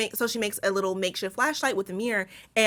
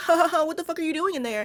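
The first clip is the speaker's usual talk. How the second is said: put-on chuckling, amused, high laughing jeer; 7 semitones higher than usual. Retelling a movie scene where Keith laughs at crying Tess: imitating someone laughing. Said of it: "Ain't shit funny".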